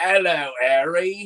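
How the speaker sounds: put-on awkward, stilted-sounding British accent. Describing the low-polygon Hagrid meme from the PS one game, awkward British accent as Hagros. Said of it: "He's just like a really awkward British accent".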